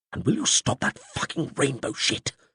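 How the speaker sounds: furious, high-pitched, angry hissed voice. Narrator reads a character's line while hiding from an animal, hissed. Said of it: "Zelair hissed".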